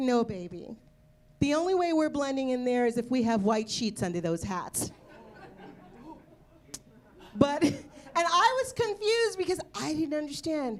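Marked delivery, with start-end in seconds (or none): none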